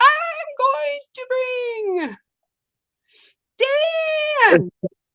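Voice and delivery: long, high, drawn-out calling voice.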